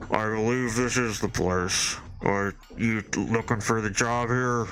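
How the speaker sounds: muffled, smothered voice, dulled as if behind cloth. Storyteller voicing someone heard from behind a door, muffled deep voice. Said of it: "in a muffled, like, deep voice".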